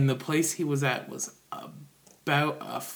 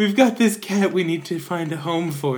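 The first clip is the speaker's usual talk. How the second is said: put-on crying with sniffles, higher, louder; 4 semitones higher, 8 dB louder than usual. Retelling answering a girl who offered help, retelling speaking through tears and sniffles. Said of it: "through my tears and sniffles".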